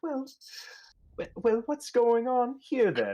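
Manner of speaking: put-on very high, sweet old-lady voice. Narrating to Clyde, voicing Bertha Shipley as she comes around the corner: sweet old lady voice. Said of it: "kind of in her sweet old lady tone".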